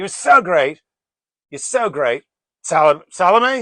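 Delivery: put-on high, loud, drunk king voice. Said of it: "so King Herod goes".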